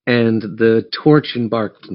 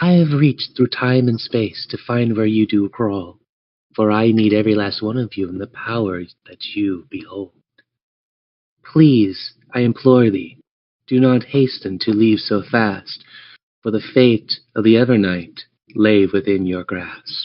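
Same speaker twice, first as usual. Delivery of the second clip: gentle goddess-like voice. Game master voices the goddess speaking into the players' minds, Reyna speaking softly. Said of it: "you hear this speak to you softly".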